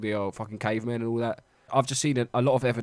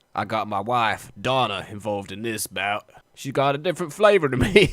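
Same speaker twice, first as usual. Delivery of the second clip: put-on mock American accent. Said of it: "I don't know why he's American".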